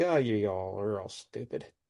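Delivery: mock delivery, laughing throughout. Recapping a story scene, imitating Malice laughing. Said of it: "Malice is just laughing like".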